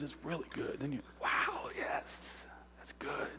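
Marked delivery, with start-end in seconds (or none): 1.2-3.3 soft, unvoiced awed whisper. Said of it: "then she winks and whispers".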